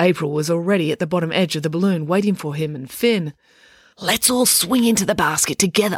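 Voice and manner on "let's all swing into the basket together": softly whispered. Reading a character waiting at the balloon's bottom edge, whispered. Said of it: "she whispered".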